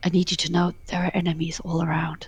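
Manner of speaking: barely voiced, very quiet whisper. Playing a character who leans into Cletus to speak to him, whispering. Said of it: "I whisper to Cletus".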